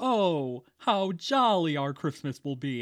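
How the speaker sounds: slow, glum, sorrowful voice with ironic lament. Retelling a film scene, imitating the mayor: imitating the sad mayor. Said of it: "And he's sad about it".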